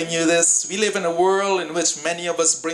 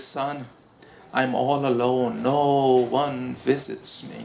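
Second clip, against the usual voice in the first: slow, trembling, quavering, shaky voice; 4 semitones lower than usual. Retelling an old mother's answer during a visit: imitating a shaking voice. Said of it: "with a shaking voice".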